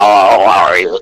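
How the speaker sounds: speech-device voice box voice. Showing the voice of a carrot that uses a voice box: Stephen Hawking voice box voice. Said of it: "the voice box, you know".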